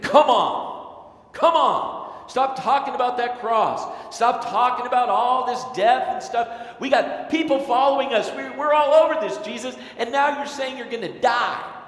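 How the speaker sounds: loud, very high voice. Acting out Peter urging Jesus to stop talking about the cross: loud Peter voice. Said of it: "I picture Peter as loud".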